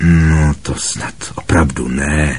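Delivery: muttered, grumbling voice. Harry replies to Hermione as they walk into the hall; grumbled. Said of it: "zabručel Harry".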